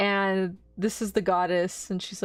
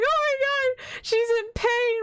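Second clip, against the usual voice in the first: play-acted tearful weeping, high and drawn-out. Retelling how mom reacted to the baby's ear piercing: imitating mom crying. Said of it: "'cause my mom was crying".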